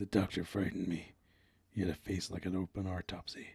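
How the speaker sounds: low, gruff film-noir detective narration voice. Speaker tries a voice for a line read aloud: gruff noir voice. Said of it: "It sounds like a gruff um, noir voice".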